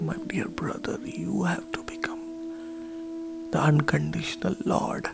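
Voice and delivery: hushed, soft whisper.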